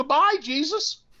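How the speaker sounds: put-on very high, teary little kid's voice. Retelling a child's tearful goodbye: imitating a tearful child. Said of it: "with tears in his eyes and goes".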